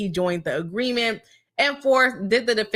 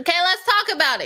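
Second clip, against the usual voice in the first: high, raised, loud yell; 7 semitones higher than usual. Speaker kicking off the discussion with the audience, yelling. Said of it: "Sorry, y'all, I'm yelling".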